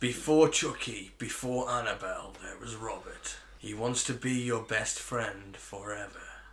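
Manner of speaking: creepy, eerie, spooky voice. Reading a creepy doll film's tagline aloud: creepy voice. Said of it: "when you said it all creepy".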